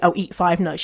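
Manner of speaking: ordinary talk, nothing marked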